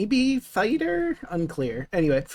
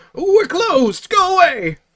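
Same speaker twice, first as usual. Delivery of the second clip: put-on very high, slow, drawn-out old man voice; 10 semitones higher, 6 dB louder than usual. Voicing someone inside answering a knock at the door: old man's voice. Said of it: "you hear an old man's voice".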